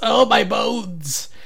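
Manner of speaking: put-on high, elderly alien voice. Recalling a moment, pretending to be an old Andorian: old Andorian voice. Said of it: "pretending to be an old Andorian".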